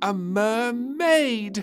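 very high, loud, drawn-out exclamation. Narrator reads the princess reaching the final pair, exclaiming. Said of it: "Exclaimed Little Princess".

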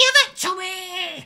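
very high, screeching bird-like human shriek. Narrating to the players as a creature screams down from above, in a bird cry mixed with voice. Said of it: "just like this bird cry, but mixed with a voice".

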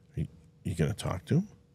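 hushed. Retelling an engineer's question to him, quietly. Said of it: "quietly goes".

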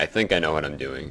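THINK stressed, lifted into a rising pitch.

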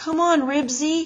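high, coaxing, persuasive voice. Narrating Henry and the strange boy calling Ribsy together, coaxing. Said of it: "they both coaxed".

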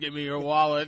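voice spoken right into a whirring fan. Joking about robbing someone by talking through an oscillating fan: Darth Vader voice. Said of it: "Talking to Darth Vader voice through it".

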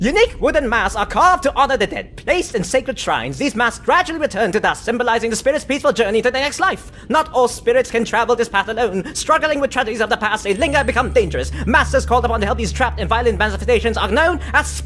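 sinister alien villain voice. Frustrated by stumbling over the text, reading it aloud: Frieza voice. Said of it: "I'm gonna read it like a Frieza".

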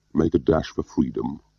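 plain

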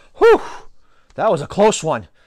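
ordinary delivery

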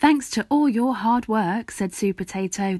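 ordinary delivery

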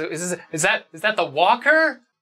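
shaking character voice. Forcus, being brought back to the group, asks a question in a shaking voice. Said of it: "kind of in a shaking voice".

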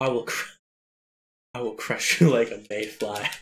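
laughing while speaking. Saying an over-the-top villain threat during a boss fight, laughing while saying villain lines. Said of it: "I can't say these without laughing".

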